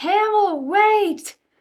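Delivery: high, urgent scream. Chasing after a fleeing child while screaming in character.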